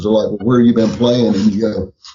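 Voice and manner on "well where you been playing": ordinary delivery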